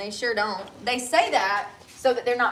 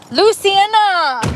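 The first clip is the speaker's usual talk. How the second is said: very high-pitched Latin American Spanish pronunciation; 10 semitones higher, 13 dB louder than usual. Trying to pronounce a name, slipping into a Latin American accent. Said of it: "Why am I saying that with an accent? ... I just went a little Latin America there".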